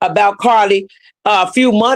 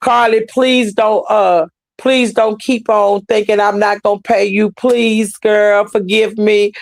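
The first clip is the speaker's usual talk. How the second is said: put-on tearful, weepy pleading. Retelling a tearful plea for forgiveness: imitating Tasha K begging tearfully. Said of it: "More or less begging, begging".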